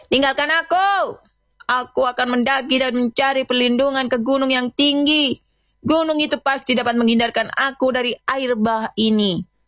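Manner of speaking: high, defiant shout. The prophet's son refuses his father's call, facing the storm, defiant shout. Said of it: "berteriak menantang badai".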